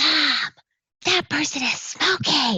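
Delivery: loud, high stage whisper. Retelling how little kids pointed out someone smoking, in a loud stage whisper. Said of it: "they were doing the whisper, loud voice".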